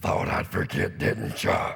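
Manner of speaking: loud, rough, rasping, creaky demonic voice. Retelling the line the mother said at two in the morning: demonic-like voice. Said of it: "said in demonic-like voice".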